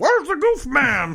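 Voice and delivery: very high-pitched shout. Describing how to walk into Disney and yell, in Bobcat Goldthwait voice. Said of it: "in my best Bobcat voice".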